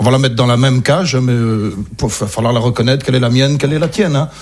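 plain

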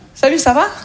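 put-on Québécois accent.

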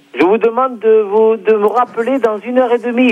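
plain

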